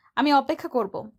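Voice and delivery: ordinary delivery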